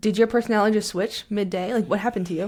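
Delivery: ordinary talk, nothing marked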